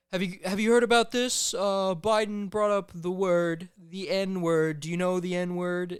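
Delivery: sloppy put-on politician voice, loud and high-pitched. Retelling a rally clip about nuclear energy: Trump impression. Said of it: "I will do a shitty impression".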